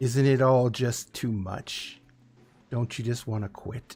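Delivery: low, monstrous creature voice. Voicing a creature that speaks into a player's mind: creature's voice heard in the mind. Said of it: "you just hear this in your mind".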